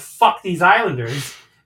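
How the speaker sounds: angry, loud, high-pitched scream. Retelling screaming when the Islanders scored: imitating a scream. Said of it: "I just screamed out".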